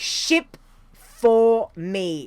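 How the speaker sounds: very slow, deliberate delivery. Giving a discount code for free shipping: very slowly spoken. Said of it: "I'm gonna speak very slowly".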